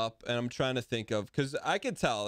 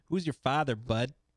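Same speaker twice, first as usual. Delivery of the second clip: put-on thick Maritime accent. Coaching someone on how to say the line, the speaker demonstrates a thick Maritime accent. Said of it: "the most maritime-esque".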